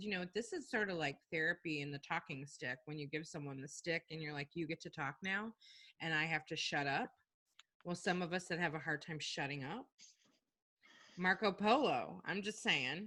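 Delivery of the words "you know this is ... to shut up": plain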